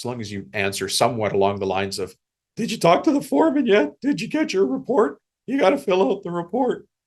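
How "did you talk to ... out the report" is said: very high, silly, goofy put-on voice. Showing that the message gets across even said goofy, in a goofy voice. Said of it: "say it like that, goofy".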